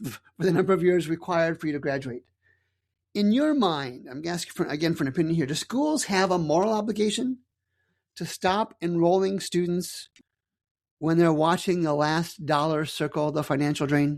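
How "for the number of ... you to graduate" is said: usual speaking voice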